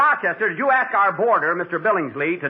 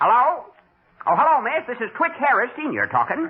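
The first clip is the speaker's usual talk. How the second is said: fake old country rube voice, pitched up; 5 semitones higher than usual. Pretending on the phone to be a boy's father: put-on old rube voice. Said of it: "I'll talk like an old rube".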